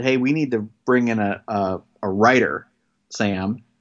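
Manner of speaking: normal talking voice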